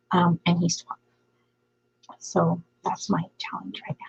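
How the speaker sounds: hushed whisper. Telling the chat about a 12-year-old who is right nearby, whispering. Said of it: "And I'm whispering because he's like right there".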